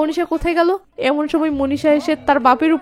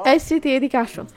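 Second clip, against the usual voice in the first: plain reading voice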